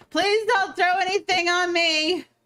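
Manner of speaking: high, slow yell. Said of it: "Sana's gonna yell upwards".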